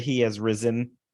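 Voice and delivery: plain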